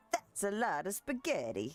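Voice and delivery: exaggerated, cartoonish, caricatured fake Italian accent. Deliberately doing a terrible caricature italian accent about spaghetti. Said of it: "This is my terrible, very caricature-ish Italian accent".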